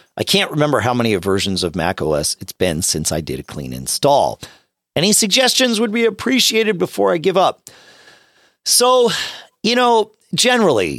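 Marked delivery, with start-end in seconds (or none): 10.3-11.0 extra weight placed on the word generally. Answering a question, the speaker stresses the word generally. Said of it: "I will emphasize the word generally".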